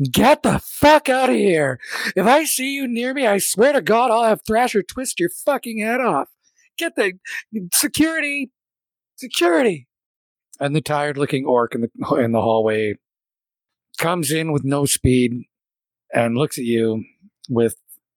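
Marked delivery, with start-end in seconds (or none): 0.1-9.9 raised-voice, high-pitched shriek. A narrator voices her outburst at the listener's character, shrieking. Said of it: "she raises her voice to a shriek".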